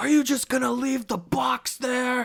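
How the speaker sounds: very high, very loud, shrill accusing scream. Telling of a woman who pulled up about a box, the speaker is imitating a woman screaming. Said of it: "starts screaming at me".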